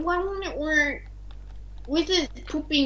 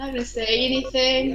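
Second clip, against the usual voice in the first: ordinary delivery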